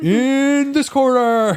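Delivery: shrill, very high, booming, loud ring announcer voice. Getting into character in a corner, doing a Space Jam announcer impression. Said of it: "I'm trying to do it like the guy does in Space Jam".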